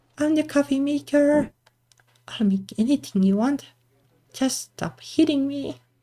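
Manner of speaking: goofy talking-machine voice. Speaker jokingly gives a voice to a coffee machine being hit: funny coffee-maker voice. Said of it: "in a funny voice".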